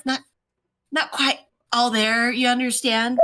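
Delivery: put-on secretive, conspiratorial, confiding old-lady voice. Playing an old lady leaning over to confide: conspiratorial old lady. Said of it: "leans over conspiratorially".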